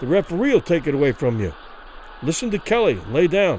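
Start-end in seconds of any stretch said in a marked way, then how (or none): none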